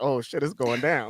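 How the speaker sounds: totally relaxed, casual, unbothered, unhurried tone. Retelling Hook's reaction to the fight, imitating him with no urgency. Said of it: "no urgency".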